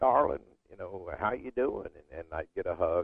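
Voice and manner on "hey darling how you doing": put-on raspy Southern voice, higher. Recalling a wrestling-business friend greeting the speaker, in her raspy Southern voice. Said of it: "She had that raspy Southern voice".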